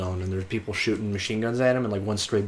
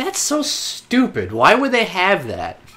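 high, slow scoff of mocking disbelief. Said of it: "you're just like".

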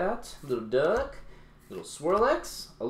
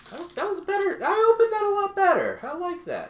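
very high, pleased voice. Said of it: "My voice got really high".

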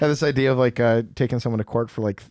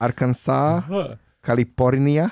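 put-on Korean-style pronunciation; 3 semitones higher than usual. Asked for a Korean impression, the speaker gives a Korean accent impression. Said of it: "I can say all of the states in Korean".

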